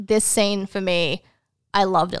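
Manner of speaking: ordinary talk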